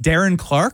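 rising, unsure, question-like intonation. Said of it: "You said that with a question mark".

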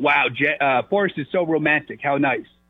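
ordinary delivery

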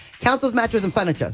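rapid-fire, super fast commercial-style read. Showing how they voice a furniture store's commercials, super fast commercial read. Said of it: "it's just me talking super fast".

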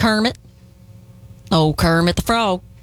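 country-flavoured frog puppet character voice. Insisting the frog sounds country, the speaker does a country Kermit the Frog voice. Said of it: "you made him sound country".

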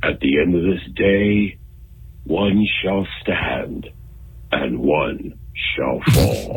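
animated robot leader voice. Calling in to a radio show to do an impression: Peter Cullen's Optimus Prime voice. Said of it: "an impression of, uh, Peter Cullen's voice of, uh, Optimus Prime".

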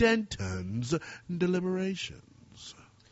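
acted cool-sounding voice. Sports radio host introducing a producer's new segment title, cool voice. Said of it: "I feel like I have to say it in this cool voice".

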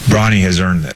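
low, sarcastic, deadpan voice.

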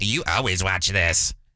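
low, slow, drawn-out remark. Retelling what a wife said about a movie: imitating Angie's voice. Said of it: "And my wife goes".

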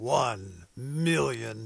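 deep movie-trailer announcer voice. Public radio host announcing a pledge-drive challenge, in movie announcer voice. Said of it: "hard not to say that in movie announcer voice".

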